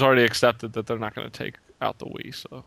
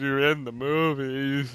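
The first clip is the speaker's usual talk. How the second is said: put-on drunk, slurred voice; 2 semitones higher than usual. Mocking a celebrity commercial: drunk Burt Reynolds impression. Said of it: "He is so drunk".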